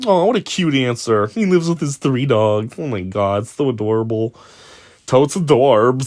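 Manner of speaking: put-on over-sweet, fawning gush in teeny-bopper style. Mocking a cute reaction to an answer: mocking teeny-bopper gushing. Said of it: "those stupid teeny boppers' dumbass ways to speak".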